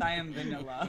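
very low, hushed mumble under breath. Retelling what another speaker said under his breath: imitating Ryan under his breath. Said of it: "Ryan under his breath".

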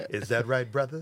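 really deep, dropped, low-voiced, challenging tone. Retelling what a coworker said to a doubter, imitating a deep voice. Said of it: "he had a really deep voice".

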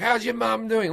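high-pitched, yelled heckling.

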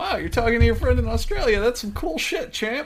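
very high-pitched dad voice. Imitating a friend's dad talking to his son: Charlie's dad impression. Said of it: "Now he's channeling it".

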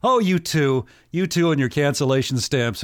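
light laugh running through the words, amused. Retelling a woman's response to her husband's offer, retelling a laughing reply. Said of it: "She kind of laughs like".

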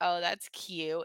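mock-dismissive 'that's cute'. Speaker shows how the phrase sounds if one of them said it, mock-dismissive. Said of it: "it's so dismissive".

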